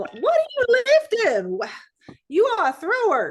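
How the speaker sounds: put-on very high-pitched, loud, swooping Southern accent. Redoing the coach's line after the other speaker asks: Joe Dial Southern accent. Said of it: "my Joe Dial Southern going on".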